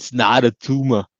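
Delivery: put-on Austrian accent like an action hero. Asked whether they can do a good Arnold impression, Arnold impression. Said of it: "Can you do a good Arnold impression?".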